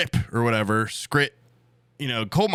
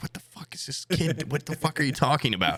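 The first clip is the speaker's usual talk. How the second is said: play-acted tearful woman's voice; 3 semitones higher, 4 dB quieter than usual. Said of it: "tears in her eyes".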